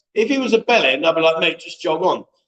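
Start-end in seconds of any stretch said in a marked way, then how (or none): none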